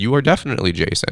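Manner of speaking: plain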